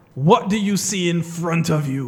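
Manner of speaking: loud, dark-toned, mock-foreboding ominous voice. Recounting a movie scene, voicing the cult leader in a mock-ominous voice. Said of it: "In a very... a very ominous voice".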